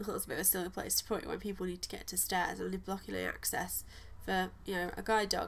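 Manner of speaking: usual speaking voice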